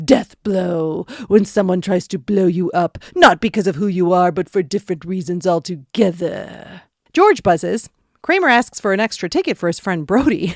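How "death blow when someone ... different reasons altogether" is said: dramatic movie trailer voice. Recapping a scene where Kramer hypes a sneak preview, in Kramer's movie trailer voice. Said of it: "Kramer goes into his movie trailer voice".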